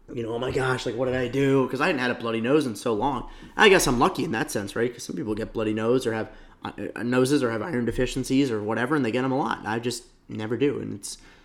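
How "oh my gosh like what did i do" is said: put-on panicked tone. Retelling a sudden nosebleed, imitating own past panic.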